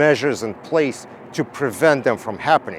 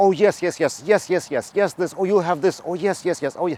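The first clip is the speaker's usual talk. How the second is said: overeager, eager, pitched-up gushing; 5 semitones higher than usual. Retelling how an outsourcing salesperson answered everything: imitating an eager yes-saying salesperson. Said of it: "he would just yes you to death".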